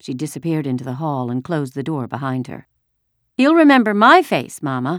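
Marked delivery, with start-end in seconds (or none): 3.3-5.0 cheerful, happy announcing, high and raised voice. Reading a story, Kirsty answers her mother: announcing happily. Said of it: "Kirsty announced happily".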